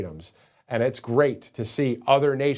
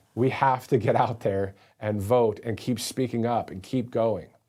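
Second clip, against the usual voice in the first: ordinary delivery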